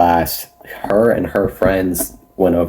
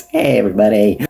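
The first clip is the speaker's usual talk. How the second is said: put-on voice of a younger child; 2 semitones higher than usual. Speaker voicing over their past self, imitating past self's voice. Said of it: "I'm gonna go with that voice".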